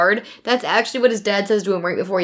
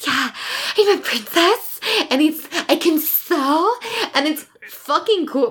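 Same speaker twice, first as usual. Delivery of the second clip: put-on baby voice, much higher pitch; 7 semitones higher than usual. Describing a character she loves, the speaker mimics Evie's crazy baby voice. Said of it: "She's doing this crazy baby voice where she's like".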